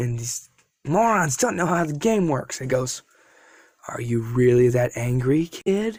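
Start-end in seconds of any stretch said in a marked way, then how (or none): 3.9-6.0 put-on creepy, sinister voice. Retelling a scene, voicing a character speaking to a kid, put-on creepy voice. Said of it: "I'm trying to make a creepy voice".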